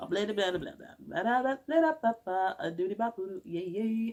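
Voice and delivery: mock, rambling gibberish babble.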